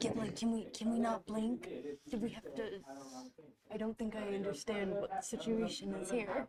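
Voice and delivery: very quiet, hushed half-whisper. During a dice-rolling game, the speaker addresses Giblet: half-whispering. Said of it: "I'm gonna stop whispering and just communicate".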